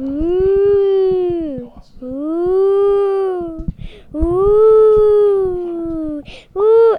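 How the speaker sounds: ghostly voice.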